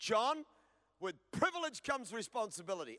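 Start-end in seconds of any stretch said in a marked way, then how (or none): none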